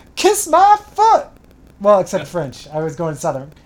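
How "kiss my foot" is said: shrill, very high, loud yell. Retelling a costumed man on a stick horse yelling from a bed: retelling a yell. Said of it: "he yells".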